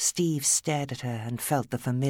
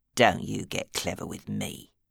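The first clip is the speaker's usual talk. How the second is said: growling, lower pitch; 3 semitones lower than usual. Steve Drayton answers Alice, who will not be intimidated, growling. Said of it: "he growled".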